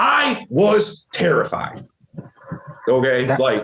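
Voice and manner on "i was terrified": punchy, emphatic, heavy stress on terrified. Demonstrating tonality for the listener with an example line, emphatic expressive delivery. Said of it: "tonality, super important here... put more emphasis on certain words".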